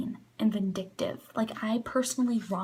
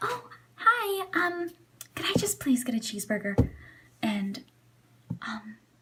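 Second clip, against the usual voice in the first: friendly, courteous, polite, sweet voice; 7 semitones higher than usual. Acting out a customer ordering at a drive-thru: imitating a polite customer. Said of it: "you could literally just be like".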